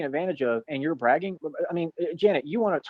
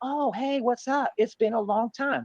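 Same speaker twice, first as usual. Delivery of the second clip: pitched-up, super fake positive, fake-nice tone; 7 semitones higher than usual. Mimicking someone who greeted them insincerely, mock fake-positive greeting. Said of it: "Super fake positivity".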